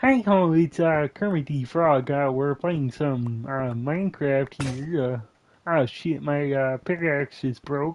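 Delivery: every word pushed from the throat. Showing how to do Kermit while playing Minecraft, a Kermit the Frog impression. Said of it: "when you try to do an impression of Kermit, you have to like come from the throat a lot".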